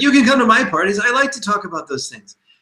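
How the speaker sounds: high, eager, welcoming tone.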